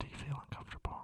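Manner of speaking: unvoiced, playful whisper.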